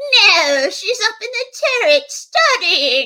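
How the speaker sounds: silly, ridiculous, high put-on witch voice. Retelling how the speaker's mom answered a friend at the door, in a ridiculous witch voice. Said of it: "my mom said in her ridiculous witch voice".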